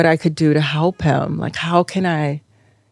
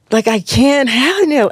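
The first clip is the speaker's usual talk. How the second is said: re-enacted scream, much higher; 8 semitones higher than usual. Speaker recounts being down on the ground beating the earth, retelling a scream. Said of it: "And you're like screaming".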